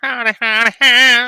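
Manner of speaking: high, loud, chirping put-on bat call.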